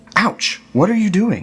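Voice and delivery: crying out angrily. Reading a fairy tale, the devil wakes as a hair is pulled: angry cry. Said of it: "cried the Devil angrily".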